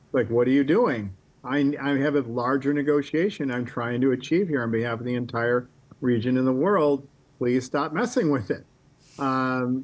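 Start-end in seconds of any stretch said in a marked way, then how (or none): none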